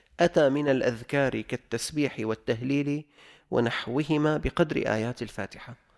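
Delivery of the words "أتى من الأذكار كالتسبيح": plain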